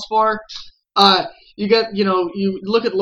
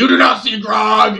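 put-on intimidating half-orc voice, slower; 4 dB louder than usual. Retelling an online story about a half-orc rogue, mock-intimidating Grog voice. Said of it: "he would just roll intimidation".

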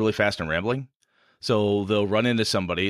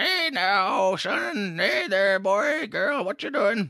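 put-on very high, haggard old crone voice; 12 semitones higher than usual. Explaining fun voices to do, demonstrating an old person voice. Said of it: "an old per, an person voice".

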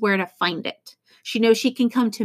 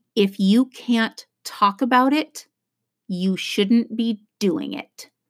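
put-on deadpan delivery. Retelling a grandmother's big advice at the table: imitating a deadpan delivery. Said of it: "looks me deadpan in the eye".

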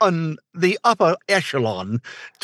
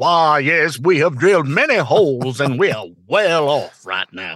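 moneyed, rich American oil baron voice. Asked to sound like a rich American, the speaker does a rich oil baron voice. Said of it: "was it supposed to be an oil baron?".

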